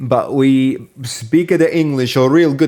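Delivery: put-on accent with Italian flavour. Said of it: "That sounded Italian".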